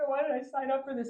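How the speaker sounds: play-acted high, breathless, tearful huffing and puffing. Telling about climbing stairs in the rain, reliving the crying and huffing. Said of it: "I'm like huffing and puffing and like crying".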